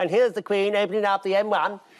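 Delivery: vintage newsreel announcer voice.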